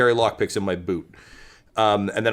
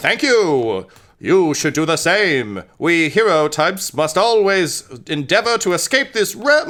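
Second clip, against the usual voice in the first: skeleton voice, much higher and louder; 8 semitones higher, 5 dB louder than usual. Game master voices a skeleton rider answering a player; skeleton voice. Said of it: "He says".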